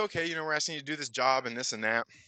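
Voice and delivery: ordinary talk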